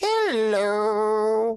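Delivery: very high, drawn-out purring voice. Reading a story, a ghost greets a ticket collector: purring. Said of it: "Hugo purred".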